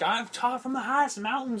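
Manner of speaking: sermonizing Southern preacher voice. Retelling how Bray Wyatt talks: Bray Wyatt southern preacher voice. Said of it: "So he's just some southern guy who's".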